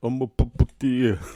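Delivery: slurred, mumbled words, as through a swollen lip. Retelling a movie scene of a beaten man: imitating a swollen-lip mumble. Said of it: "'Cause he couldn't even say it right. His old bloody mouth".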